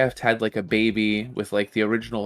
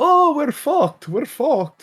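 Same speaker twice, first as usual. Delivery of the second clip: put-on speech with Bulgarian accent; 5 dB louder than usual. Retelling what they said just before the Kickstarter launch, thick Bulgarian accent. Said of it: "in like their thick Bulgarian accents".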